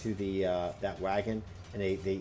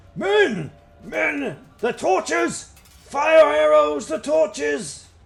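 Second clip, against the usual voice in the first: rough, barked, very high, very loud shout; 14 dB louder than usual. Narrating a fight, voicing a man calling from the back, rough shouting voice. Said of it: "a rough voice from the back".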